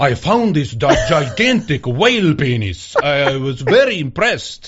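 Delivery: bad, mangled, butchered attempt at Dutch accent. Podcast host quotes the collection's founder, in a bad Dutch accent. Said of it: "That's a Dutch accent".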